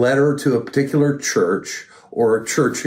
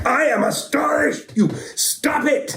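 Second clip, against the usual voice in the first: very high, stern, deliberate drill sergeant voice. Explaining a tone, the speaker voices a drill sergeant addressing a private. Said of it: "a drill sergeant who comes across a private".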